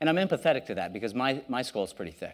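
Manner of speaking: ordinary delivery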